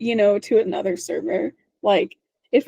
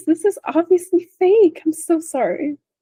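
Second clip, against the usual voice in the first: put-on extremely polite voice, higher; 7 semitones higher than usual. Imitating Bridget turning down a bedroom: imitating Bridget, nicest way possible. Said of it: "You just do it in the nicest way possible".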